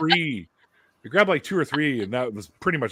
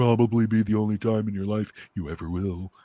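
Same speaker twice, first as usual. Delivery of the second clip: mock snotty rich person voice; 3 semitones lower than usual. Retelling a first caviar offer at a mansion: imitating a snotty rich person. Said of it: "one of them snotty kinda".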